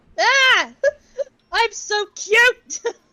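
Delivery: thrilled, delighted, excited voice, high and bright. A player realizing their character is now a Rockruff, excited. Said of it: "Though you sound excited from your voice".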